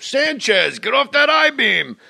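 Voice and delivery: high-pitched yell, pitch rising upward. Imitating a construction worker next door: imitating a construction worker yelling. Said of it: "there's guys walking on I-beam".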